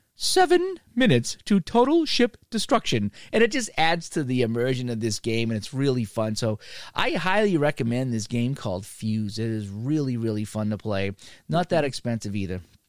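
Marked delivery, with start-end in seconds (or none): 0.2-3.1 very high, swooping, put-on English lady voice. Recommending a game, quoting the lady in its countdown app: imitating an English-accented lady. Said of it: "some lady with an English accent going".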